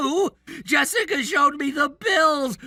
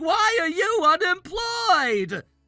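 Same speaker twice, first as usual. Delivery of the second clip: put-on scolding yell, accusing tone; 5 semitones higher than usual. Retelling what the parents yelled at a meeting: imitating parents yelling. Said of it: "so they yelled at me saying".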